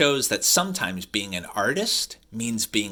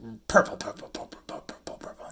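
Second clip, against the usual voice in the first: fast, rattling whispered repetition. Reading a colour book aloud and repeating the colour word: saying it really fast. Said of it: "That's hard to say really fast".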